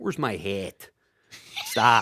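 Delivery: over-the-top Chicago accent, low and soft. Complaining about exaggerated regional accents, giving a Chicago example: exaggerated Chicago accent. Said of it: "Like when you're in Chicago".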